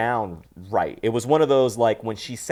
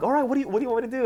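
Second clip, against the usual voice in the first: put-on almost happy, quick, cheerful, pitched very high; 13 semitones higher than usual. Retelling a movie scene, imitating an almost happy character. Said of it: "almost happy now".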